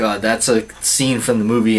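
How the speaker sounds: plain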